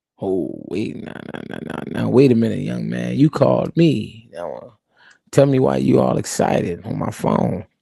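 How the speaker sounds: put-on relaxed, calm, unhurried, easygoing old-timer voice. Acting out the boss answering an excited caller, imitating a calm unhurried man.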